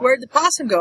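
normal talking voice

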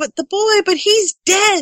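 shouting, pitched very high. Narrator reading a son's protest to his dad, shouted. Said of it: "James shouted".

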